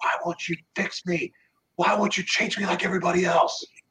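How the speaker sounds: raging, high-pitched, furious cursing scream. Retelling screaming and cursing at him, retelling a furious scream. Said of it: "I started screaming and cursing at him".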